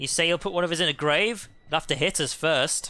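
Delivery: put-on, mocking, jeering taunting tone. Taunting an enemy in a fight: taunting in character. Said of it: "sick burn".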